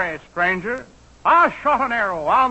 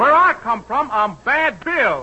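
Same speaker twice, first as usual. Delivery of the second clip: mock cowboy voice with put-on Western manner; 2 semitones higher than usual. A city man poses as a tough Westerner: fake Westerner talk. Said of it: "You sound like a West End Avenue Westerner".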